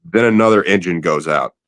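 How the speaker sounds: plain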